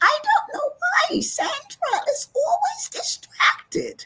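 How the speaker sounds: very high-pitched schoolteacher voice. Recalling her first-grade teacher talking to her mother, imitating the teacher's high voice. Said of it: "she had a real high voice".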